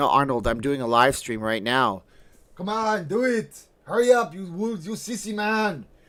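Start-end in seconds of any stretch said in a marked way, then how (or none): 2.5-5.8 very high, drawn-out, slow yell. Playing Arnold yelling at the speaker to hurry: Arnold impression yelling. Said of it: "Arnold, stop yelling at me".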